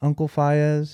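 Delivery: put-on little, squeaky, high child's voice. Retelling what a nine-year-old kid said to him by the pool, squeaky nine-year-old voice. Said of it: "squeaky voice".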